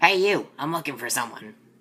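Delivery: badly done, put-on woman's voice. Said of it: "That was a terrible woman voice".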